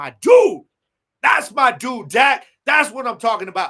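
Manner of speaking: loud yelling rising in pitch. Retelling watching a game, retelling yelling at the TV. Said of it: "And I'm yelling at the T V".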